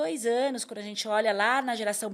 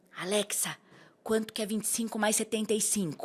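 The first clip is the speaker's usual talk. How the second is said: quiet, put-on boy's whisper. Retelling how a little boy asked Alexa a sum: imitating a boy whispering. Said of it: "falando baixinho com a Alexa".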